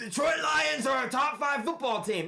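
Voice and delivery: blaring yell, pitched very high. Imitating a TV sports pundit who yells his takes: imitating Stephen A yelling. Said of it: "just sits there and, and yells".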